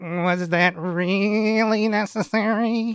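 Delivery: high, very nasal character voice. Recounting a line from a scene, in a very nasally voice. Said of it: "you hear a very nasally voice say".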